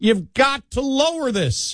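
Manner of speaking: whiny, high-pitched, slow pleading.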